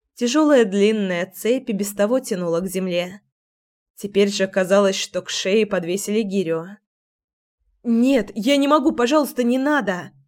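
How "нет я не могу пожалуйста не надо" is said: panicked, pleading voice breaking out. Narrator reading a chained woman's plea not to be punished, panicked. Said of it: "В панике прорезался голос".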